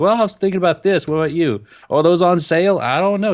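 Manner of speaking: put-on chatty Southern accent. Retelling a chat with a woman heading into Hobby Lobby, slipping into an accent. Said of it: "I love how you slip into the accent".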